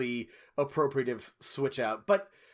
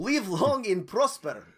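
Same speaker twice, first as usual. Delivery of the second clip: put-on Russian accent, pitched higher; 6 semitones higher than usual. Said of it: "they would all sound like Chekhov".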